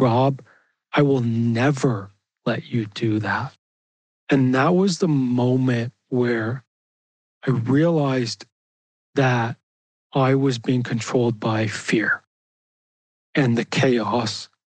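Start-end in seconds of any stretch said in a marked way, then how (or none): 0.0-3.5 severe, judgmental, stern voice, acted out. Acting out a harsh inner critic's reply: stern inner critic voice. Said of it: "that stern judgment, internal critic voice".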